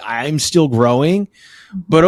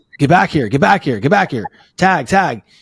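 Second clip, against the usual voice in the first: shouting voice; 2 semitones higher than usual. A parent retells calling to his son on third base to tag up; retelling yelling. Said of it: "I'm like".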